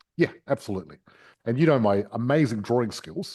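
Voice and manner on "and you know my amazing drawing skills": ordinary delivery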